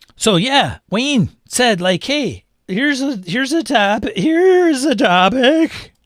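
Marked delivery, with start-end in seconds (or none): 2.0-5.8 put-on cartoon voice, high pitched and drawn out slowly. Quoting Wayne suggesting a topic: Shaggy voice. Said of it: "In my shaggy voice".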